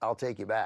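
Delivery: plain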